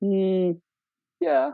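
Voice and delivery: very high, slow, hesitant, reluctant squeak. Acting out her hesitant answer: mock-hesitant squeaky yeah. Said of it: "The hesitation, the tone, the squeak".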